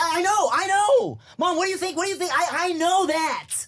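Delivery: exasperated, blown-up outburst. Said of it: "I blew up a little bit".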